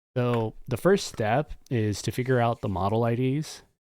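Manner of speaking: ordinary talk, nothing marked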